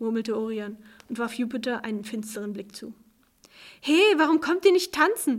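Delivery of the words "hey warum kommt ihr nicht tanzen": raised, high calling-out voice. Reading a story, a character calls from the dance floor to the others: calling out.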